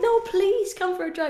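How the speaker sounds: mock, high-pitched, coaxing, pleading beg. Retelling how a visitor in the hotel room begged: imitating someone begging. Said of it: "begging me".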